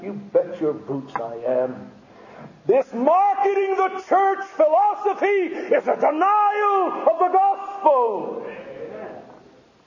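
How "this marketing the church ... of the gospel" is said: loud shout. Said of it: "That's why I'm crying out against it".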